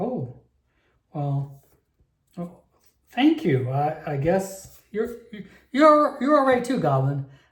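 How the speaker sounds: taken-aback, shocked, stunned halfling voice. Voicing a halfling in a tabletop game after being bought an ale, shocked halfling. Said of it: "That the halfling shocked".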